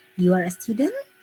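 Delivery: rising intonation on the word "student". Teaching intonation patterns, a positive sentence said with confirming question intonation. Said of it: "Tapi intonasi kita ingin konfirmasi".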